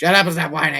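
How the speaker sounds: loud, high-pitched yell. Acting out what a parent might say to a whining child: mock yelling. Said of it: "I'm sure I just screwed up your volume levels with that".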